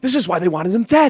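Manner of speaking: quiet, hushed tone. Turning to another player during a tense ceremony: hushed tone. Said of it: "in a hushed tone".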